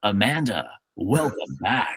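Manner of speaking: hushed, swooping movie trailer announcer voice. Retelling the end of a movie caught on tv, in a movie trailer guy voice. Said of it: "the movie trailer guy voice comes on, and he goes".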